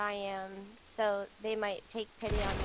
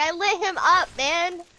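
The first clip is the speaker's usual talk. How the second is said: loud, drawn-out, high-pitched yelling; 8 semitones higher, 13 dB louder than usual. Gamer telling a teammate about a kill, yelling. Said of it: "cause I'm yelling".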